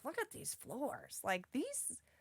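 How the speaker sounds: swooping, sing-song exclamation, pitch swinging all over. Retelling own words about old floors at brunch: Marge Simpson voice. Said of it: "I sounded like Marge Simpson just then".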